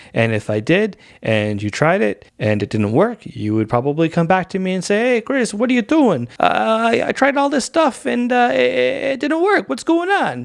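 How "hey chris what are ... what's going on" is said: put-on Brooklyn accent, very high, yelling. Speaker imitating a person coming back to complain to him, faux Brooklyn accent. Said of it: "I'm doing this faux New York, Brooklyn accent".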